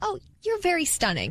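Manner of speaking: genuine, high tone. Showing how a compliment sounds said in a genuine way: genuine, sincere tone. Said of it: "If it's genuine, like, ... See that tone? Harmless".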